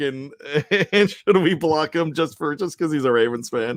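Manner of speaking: talking through laughter. Asking the co-host whether to block a Ravens fan, laughing while talking. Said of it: "I'm laughing because Aaron's back".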